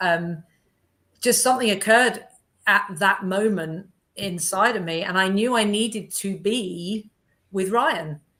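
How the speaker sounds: slow, emotional, choked-up voice. Recalling a moving moment at the end of a weekend, getting emotional. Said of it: "I'm getting emotional talking about it".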